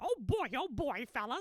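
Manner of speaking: high cartoon mouse voice. Demonstrating the entry phrase you always needed to do the voice, in a Mickey Mouse voice. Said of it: "I couldn't do Mickey's voice without saying".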